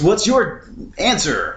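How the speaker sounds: put-on high, swooping game show host voice. Describing a scene where they did a game show: game show host voice. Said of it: "talking in a game show voice".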